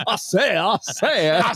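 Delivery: put-on cartoon rooster voice. Joking about an absent friend's impressions, doing a Foghorn Leghorn voice. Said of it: "every Ed impression sounds like oh, uh, Foghorn Leghorn".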